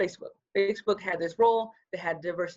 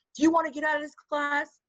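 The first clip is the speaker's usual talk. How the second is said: mock teacher voice, high-pitched and yelling; 8 semitones higher than usual. Retelling being called out in class: imitating a teacher yelling. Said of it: "the teacher yelled at me like".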